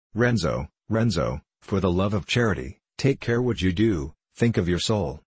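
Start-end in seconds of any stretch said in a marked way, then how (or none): none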